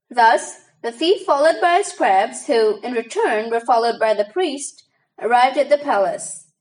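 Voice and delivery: ordinary talk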